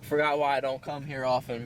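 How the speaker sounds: plain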